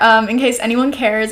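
normal talking voice

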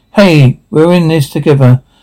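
ordinary delivery

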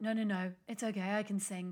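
put-on sick-sounding voice. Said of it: "my voice kind of sounds a bit like this".

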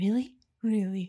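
gentle, soft whisper. Describing a scene's ending, both characters ask each other in the gentlest whisper. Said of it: "the most gentle, whispered".

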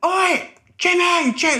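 put-on shouting. Retelling how a man at a restaurant table shouted: imitating someone shouting. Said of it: "he just started shouting".

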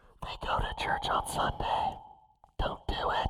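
whispered inner voice, slowed down.

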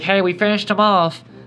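held-nose nasal voice. Retelling a story where Peter Pan knocks on the captain's door, pinched-nose Smee voice. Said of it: "Peter Pan holds his nose".

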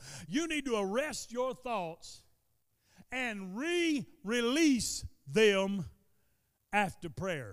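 drawn-out, deliberate, very soft, very slow, hushed, low. Speaker urging listeners, saying it slow. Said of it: "I'm going to say this slow".

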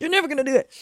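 high-pitched, obnoxious, taunting little devil voice. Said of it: "he's gonna be super loud and, like, super obnoxious".

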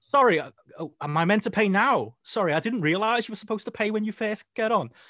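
very high confused British tourist. Retelling what happened when conductors got on the bus, do [name]'s confused British tourist act. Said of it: "being confused British tourist".

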